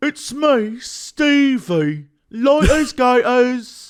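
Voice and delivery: put-on British accent. Doing the voice of the dude from Moon Knight: British accent. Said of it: "this British accent".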